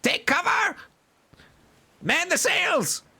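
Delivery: shrill, very high goblin shrieking. Narrator voicing goblins as a creature vanishes into the mist: goblins screaming. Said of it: "the goblins are all kind of starting to scream like".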